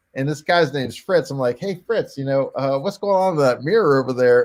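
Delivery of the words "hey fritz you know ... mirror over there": put-on sarcastic smart-aleck tone. Retelling asking a sleepy passenger about the mirror: retelling own smart-ass question. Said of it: "I'm being a smart ass".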